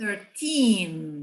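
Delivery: put-on thirteen with the weight on teen. Teaching English numbers to Portuguese speakers, stress on teen in thirteen. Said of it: "o teen é a parte mais forte na hora da pronúncia".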